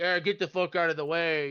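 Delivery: mock rude, dismissive, can't-be-bothered tone. Describing a rude character who snaps at a polite person: imitating a rude dismissive guy. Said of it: "if they're kind of a dick".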